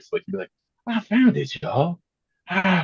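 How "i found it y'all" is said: mock, funny, out-of-breath voice, higher pitched. Imitating a TikTok creator's catchphrase: funny out-of-breath voice. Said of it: "he had that really funny voice".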